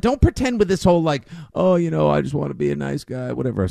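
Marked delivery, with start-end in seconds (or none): 1.5-3.3 rough, creaky, raspy, badly put-on voice. Imitating a quarterback pretending to be nice: bad Bill Clinton voice. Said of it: "I made Mac Jones sound like a bad Bill Clinton".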